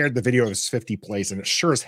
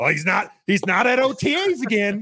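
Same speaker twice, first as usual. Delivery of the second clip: put-on griping, complaining voice; 10 semitones higher than usual. Imitating Stoner griping about Chase missing OTAs: Stoner griping impression. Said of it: "not having to hear about Stoner gripe about".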